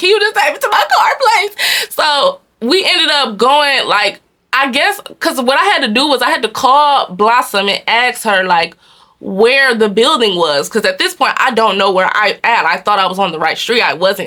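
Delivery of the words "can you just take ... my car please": put-on high, choked-up tearful voice, barely getting words out. Recalling being yelled at, the speaker quotes her crying past self, retelling a tearful plea. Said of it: "I couldn't even talk at the moment".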